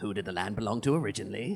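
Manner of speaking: put-on soft old crone character voice. Game master voicing the hag questioning the players, voicing the hag. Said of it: "The hag says".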